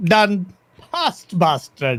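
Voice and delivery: put-on Saudi-accented voice. Retelling how the Saudis approved the deal: imitating the Saudis. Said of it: "They don't sound like that".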